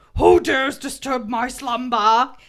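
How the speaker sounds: booming, slow, loud lion voice. Quoting the lion from the Cave of Wonders: Cave of Wonders lion voice. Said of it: "as the lion from the Cave of Wonders on Aladdin says".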